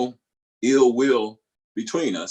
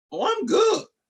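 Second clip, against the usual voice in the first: very high-pitched, falsely breezy, unconvincing tone. Acting out answering someone who asks if you're mad, high-pitched. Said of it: "Just me saying it with that high pitch shows that it's not true".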